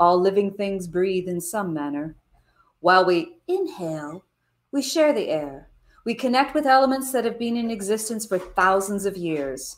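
fabulous, dramatic storyteller's read-aloud voice. Reading a passage aloud to listeners, in a fabulous reading voice. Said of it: "read this with your fabulous reading voice".

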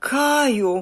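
high, fearful, frightened cry, drawn out. The girl calls out to Kai, cried out in fright. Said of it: "zawołała z przestrachem dziewczynka".

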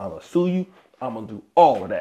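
ordinary talk, nothing marked

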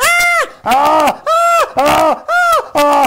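loud, high screaming. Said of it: "¡Ay, por qué grita!".

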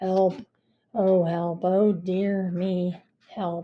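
rather bored, flat voice, no urgency. Narrator reading a story; a cat calls for help, in a bored voice. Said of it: "they heard a rather bored voice saying".

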